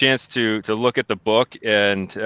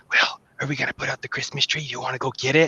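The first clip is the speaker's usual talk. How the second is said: put-on hushed, whispered, sneaky little kid voice; 4 semitones higher, 5 dB quieter than usual. Retelling what a three-year-old whispered to her brother: imitating a child whispering. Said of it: "I hear her whispering to him".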